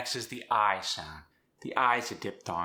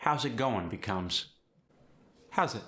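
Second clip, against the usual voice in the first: ordinary talk, nothing marked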